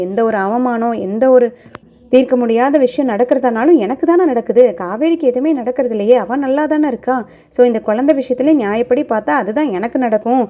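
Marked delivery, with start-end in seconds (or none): none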